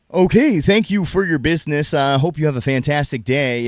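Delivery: calm, smooth, soothing newscaster delivery. Demonstrating the voice you slip into, a soothing reporter voice. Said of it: "that's like my reporter voice".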